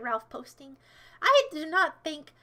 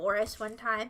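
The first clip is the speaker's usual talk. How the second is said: ordinary talk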